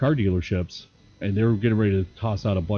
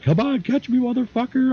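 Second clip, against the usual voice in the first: acted-out scream, very high-pitched. Retelling laughing while taunting the Abram driver chasing your minivan, retelling a scream. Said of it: "I'm just screaming at him".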